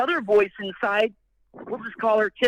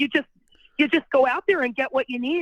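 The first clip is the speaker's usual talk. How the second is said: put-on grandma voice with Wisconsin accent; 3 semitones higher than usual. Doing grandma's voice while quoting her advice, Wisconsin grandma accent. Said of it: "every time I do my grandma's voice, I just make her from Wisconsin".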